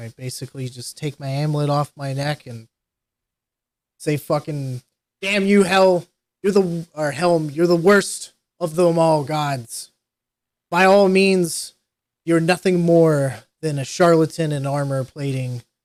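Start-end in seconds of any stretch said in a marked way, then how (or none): 4.2-14.5 furious, loud, angry shouting. Character alone in a cavern renouncing faith in a god, yelling out in anger. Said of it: "I'm yelling out to the darkness now".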